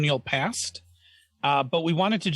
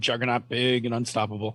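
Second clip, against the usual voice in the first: ordinary delivery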